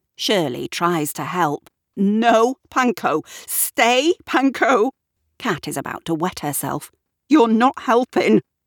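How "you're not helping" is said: breaking up, laughing through the words. [name], trying to help stop Panko, speaks while beginning to dissolve into laughter. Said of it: "who is beginning to dissolve herself".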